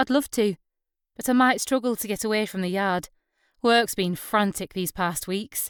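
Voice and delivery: ordinary talk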